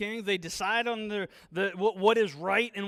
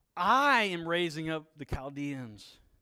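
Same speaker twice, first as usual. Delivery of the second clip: stress on the word I; 4 semitones lower than usual. Reading God's words to Habakkuk aloud, with stress on the word I. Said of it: "stress on I".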